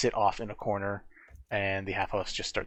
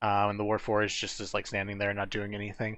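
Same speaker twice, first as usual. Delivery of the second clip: ordinary talk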